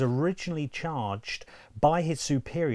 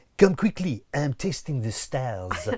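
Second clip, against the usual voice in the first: fake French accent throughout. Asked by the other speaker to redo the quote, put-on French accent. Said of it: "with a French accent, please".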